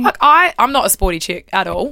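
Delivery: plain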